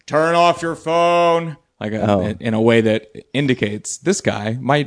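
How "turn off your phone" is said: play-acted stern voice, pitched up, slightly unhinged. Speaker shows how they tell people to put their phone away, stern voice. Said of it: "I make a stern voice".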